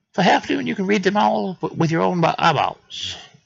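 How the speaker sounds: very high, squeaky, rough little rabbit voice. Voicing a rabbit character selling news: fast-talking rabbit voice. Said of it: "It's a rabbit, so I would think it would talk fast".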